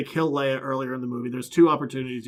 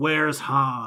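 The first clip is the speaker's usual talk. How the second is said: put-on grave hero voice. Retelling a favorite movie line with so much gravitas: imitating Luke Skywalker with gravitas. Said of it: "with so much gravitas".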